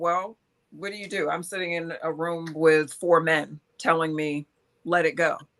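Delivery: plain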